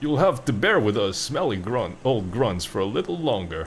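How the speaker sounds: bold, noble, heroic delivery. Repeating a game character's line in his heroic voice. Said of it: "he even puts on, like, the heroic voice".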